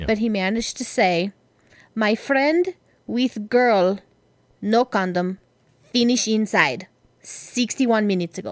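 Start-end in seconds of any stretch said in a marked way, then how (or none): 1.9-8.5 bad Russian accent drifting into a Spanish sound. Retelling what a Russian kid with little English said, bad Russian accent. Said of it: "So suddenly he's from Spain or Mexico".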